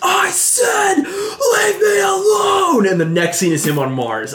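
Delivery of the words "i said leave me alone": very shrill, very high, very slow, drawn-out scream. Retelling a movie scene where a crowd rushes a man, retelling a scream. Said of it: "And then he just screams".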